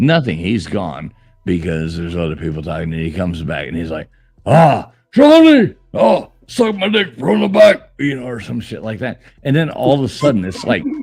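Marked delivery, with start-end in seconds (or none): 4.5-7.9 very high, stretched-out, drawn-out yelling. Doing an impression of a streamer yelling on stream: imitating a streamer yelling. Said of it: "That was a good impression".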